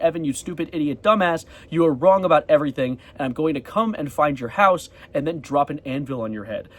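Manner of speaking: ordinary talk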